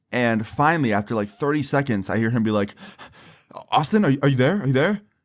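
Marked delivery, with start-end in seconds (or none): 3.7-4.9 acted, winded, fast, out-of-breath voice. Retelling a phone call from a friend who had been running: imitating Jeremy out of breath. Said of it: "I just keep hearing him breathe".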